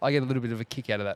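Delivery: ordinary talk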